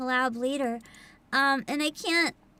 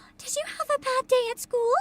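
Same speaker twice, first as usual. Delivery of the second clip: very high-pitched, posh motherly voice; 9 semitones higher than usual. Describing a trailer's two voices, the speaker imitates one: very high-pitched, very posh mom voice. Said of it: "very high-pitched, very posh mom voice".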